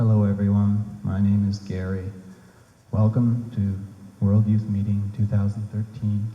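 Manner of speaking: level, toneless voice. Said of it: "use a flat voice. Don't use any stress or intonation".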